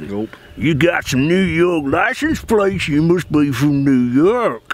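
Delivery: put-on Mississippi Southern accent. Retelling being questioned by a local, quoting him in a Mississippi accent. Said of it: "nice accent there, man".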